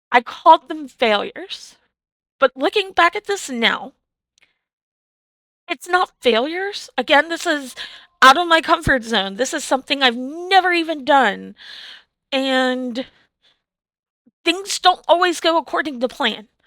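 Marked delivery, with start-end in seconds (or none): 0.1-6.9 teary, choked-up voice, catching, close to tears. Streamer reflecting on frustrations from a two-hour live stream, on the verge of tears. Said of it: "I don't know why I'm gonna cry".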